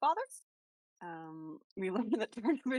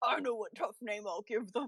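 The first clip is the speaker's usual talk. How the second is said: big, macho tough-guy voice. Picturing a big macho guy naming his child: imitating a macho guy. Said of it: "big macho guy being like".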